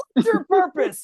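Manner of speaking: imitated yelling. Retelling how a workout instructor kept shouting at riders: imitating an instructor yelling. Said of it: "she would yell at me the entire time going".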